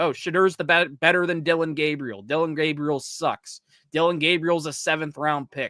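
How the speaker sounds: usual speaking voice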